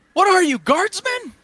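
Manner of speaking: very high, loud yelling. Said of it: "Morgan kinda yells, uh, yells back".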